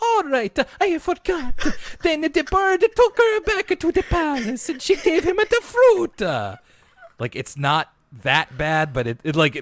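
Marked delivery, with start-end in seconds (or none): 0.0-6.2 put-on cartoonish character voice, pitched very high. Showing listeners who missed the earlier episode how Pepe sounds: Pepe voice. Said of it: "Pepe's just like".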